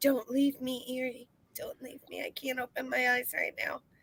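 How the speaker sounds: soft, hushed whisper under the breath. Still up in the box, speaking to erie; whispering. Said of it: "I'm gonna whisper".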